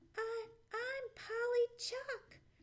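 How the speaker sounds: small, meek, timid, very high voice. A stranger answers a gruff demand to know who he is, small, timid voice. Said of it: "replied the stranger in his small, timid voice".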